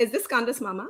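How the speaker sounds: imitated Indian accent. Retelling a phone call, speaker imitates the caller asking for her, put-on Indian accent. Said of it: "do the accent".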